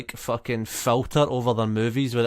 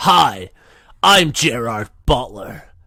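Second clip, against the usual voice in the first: put-on loud mid-Atlantic accent; 5 dB louder than usual. Mocking an actor's accent as an insult to his nation, Gerard Butler transatlantic accent. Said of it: "That's transatlantic voice".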